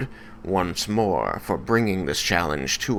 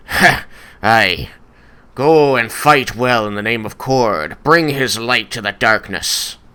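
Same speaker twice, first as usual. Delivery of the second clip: laughing dwarf voice, higher and louder; 3 semitones higher, 8 dB louder than usual. Voicing a dwarven cleric who laughs and sends the party to fight: dwarven cleric Doran the Axe, laughing. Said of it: "will nod and laugh and say".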